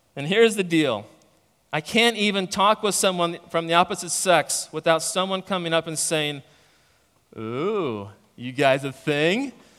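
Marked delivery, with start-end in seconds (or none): 7.4-9.5 slow, put-on creepy, prying, teasing voice. Mimicking someone who teases about talking with the opposite sex, in a mock-creepy voice. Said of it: "That was kind of a creepy voice".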